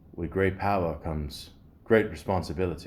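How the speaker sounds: mock English accent.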